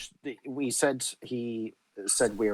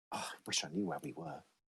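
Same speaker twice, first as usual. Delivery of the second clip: whispered murmur, muttered under the breath; 5 semitones higher, 11 dB quieter than usual. Speaking in character during a game, muttering under breath. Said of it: "mutter under my breath".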